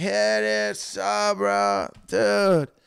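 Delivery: very slow, loud, creaky fake blackout-drunk drawl. Retelling facing an angry man at the door: imitating a put-on blackout drunk voice. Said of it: "pretending I was, like, blackout drunk".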